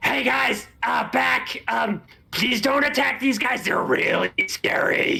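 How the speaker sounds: very high-pitched, yelling goblin voice. Storyteller voicing a goblin in a tabletop game, yelling in Orcish. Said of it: "the goblin yells out in Orcish".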